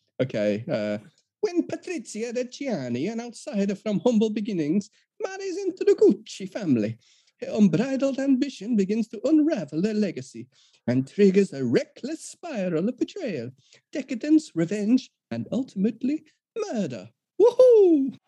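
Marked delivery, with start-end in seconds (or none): 1.4-18.1 put-on Italian accent. Reading a film summary as asked, in the most offensive stereotypical Italian accent: Jared Leto's Paolo Gucci voice. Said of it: "you don't know how good an impression you just did".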